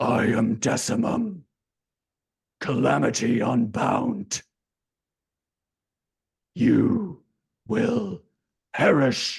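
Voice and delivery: rough, creaky, booming voice. Narrator voices the winged being that just emerged, low booming Decimum voice. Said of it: "A low, booming voice".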